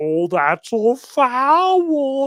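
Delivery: very slow mocking drawl, "foul" drawn out. Retelling how a priest made fun of opponents: imitating a mocking tone. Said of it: "Father Cekada was making fun of these people".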